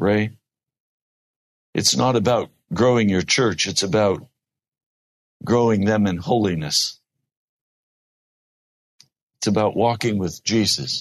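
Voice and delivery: understated, even, simple, low-key tone. Retelling Dad's reply about growing the church: imitating someone speaking very quietly. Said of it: "He'd just very quietly say to me".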